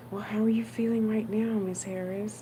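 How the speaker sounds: very quiet, softest possible hushed voice. Retelling what the doctor asked during an eye exam: softest voice. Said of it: "In the softest voice".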